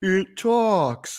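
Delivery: dragged-out slowed speech. Recalling the other speaker's video line: imitating a slow motion voice. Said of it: "Every time you do the whole slow motion voice".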